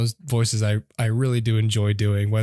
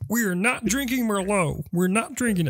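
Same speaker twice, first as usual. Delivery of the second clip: frog puppet voice, much higher; 10 semitones higher than usual. Doing Kermit saying a line from the film Sideways; Kermit the Frog voice. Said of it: "I'll do Kermit in Sideways".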